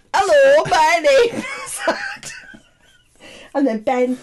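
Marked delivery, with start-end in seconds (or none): 0.1-2.3 put-on loud, sing-song, Leeds-style northern English accent. Showing friends how Adam, who is from up north, talks: Adam's northern English accent. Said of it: "Because he's from up north".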